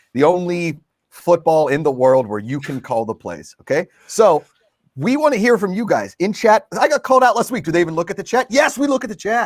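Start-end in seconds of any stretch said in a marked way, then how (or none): 8.5-9.5 abrupt, emphatic, high raised yell. Host answers the viewers in the chat, yelling. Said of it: "Sorry for yelling".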